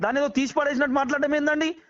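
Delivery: high-pitched angry outburst.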